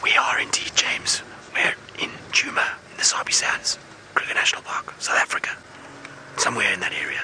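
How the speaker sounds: hushed whisper. Replying to james over a live link, whispering. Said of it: "I don't know why I'm whispering either".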